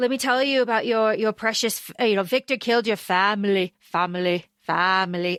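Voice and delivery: put-on Scottish accent. Speaker recapping a film scene, quoting Craven telling Celine: Craven's Scottish accent. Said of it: "his Scottish accent breaks here".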